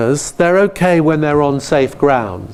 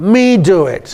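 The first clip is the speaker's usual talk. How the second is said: put-on high, slow, grumpy toddler voice. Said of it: "a rather grumpy three-year-old who says".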